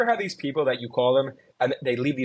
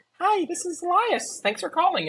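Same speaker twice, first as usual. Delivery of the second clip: put-on very high, childlike little-kid voice. Recalling his voicemail recorded back in fourth grade, doing a high fourth-grade kid voice. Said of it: "you mentioned the high voice".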